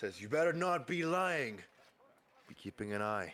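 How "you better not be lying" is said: high, drawn-out, threatening tone called out. Voicing a guard who shouts after the departing party: guard shouting a warning. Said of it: "shouts at you as you're leaving".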